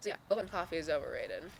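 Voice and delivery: ordinary talk, nothing marked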